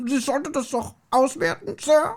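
very high, exaggerated cartoon-figure voice. Retrying an impression in German, in an exaggerated cartoon-like voice. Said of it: "der redet wie eine Cartoon-Figur".

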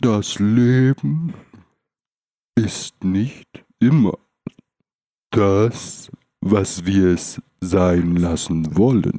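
slow, unhurried, relaxed, laid-back thoughtful musing. Imitating someone who talks philosophically, slow and put-on relaxed. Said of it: "aber so langsam und entspannt".

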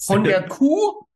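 put-on completely stunned, high shocked disbelief. Retelling what a woman said back to him, mock-shocked. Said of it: "komplett schockiert".

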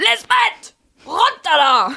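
very high, loud yelled shout. Trying out how well a name can be shouted, shouted. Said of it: "kann man gut schreien".

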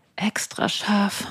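seductive, breathy, sultry whispered voice. Taking turns on mustard lines in German: sexy sultry voice. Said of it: "sagst du jetzt extra scharf mit sexy Stimme".

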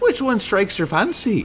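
bright, cheerful, very high voice. Narrator reads a halfling stall proprietor asking the knights: cheerful voice. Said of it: "With a cheerful voice".

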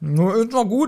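talking with mouth full. While eating and judging how they taste, talking with mouth full. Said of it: "Wenn ich [name] so mit vollem Mund höre".

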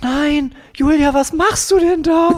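shrill very high woman's voice. A woman's voice calls out to Julia from behind, retold: imitating a woman's voice. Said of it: "so eine Frauenstimme so".

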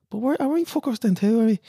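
put-on very high-pitched Dublin Irish accent. Retelling a boy's remark from a fond memory: Danny's Dublin accent. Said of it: "Kleiner Danny Dublin mit Sommersprosse und seinem Dublin-Akzent".

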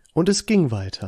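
different storyteller's narration voice. Repeating the previous line, in a different narrator voice. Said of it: "Andere Erzählerstimme".

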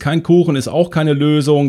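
ordinary talk

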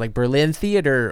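ordinary talk, nothing marked

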